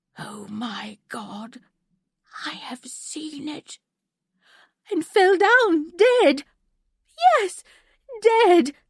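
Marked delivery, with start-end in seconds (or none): 0.2-3.8 terrible husky groan, very quiet, barely audible. Narrator reads a young man's last words before he falls dead, in a terrible husky groan. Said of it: "he groaned in a terrible husky voice".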